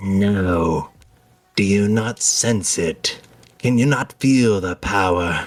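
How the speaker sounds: slow, raspy character voice. Narrator voicing the winged woman speaking to you: raspy winged woman's voice. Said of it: "a raspy voice from the winged woman".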